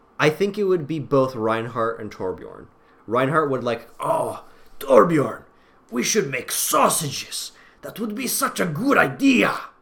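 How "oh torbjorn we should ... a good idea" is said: put-on odd, vaguely Serbian accent, pitched higher. Imagining Overwatch characters making sausages, the speaker voices a weird Serbian-ish Reinhardt voice. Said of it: "I gave him like a weirdly Serbian accent".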